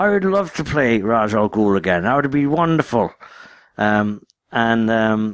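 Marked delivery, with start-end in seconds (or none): 0.0-3.1 put-on pitched-up Irish accent. Retelling what an actor said about playing a role again: Liam Neeson Irish accent. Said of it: "in his, his Irish accent".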